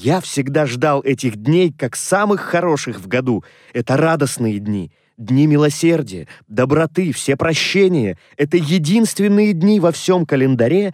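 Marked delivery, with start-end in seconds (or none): none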